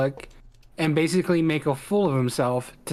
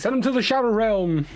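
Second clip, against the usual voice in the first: offhand, high, called-out voice; 6 semitones higher than usual. Retelling what a guy walking by in the video yelled: imitating a passerby yelling. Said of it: "the guy yelling".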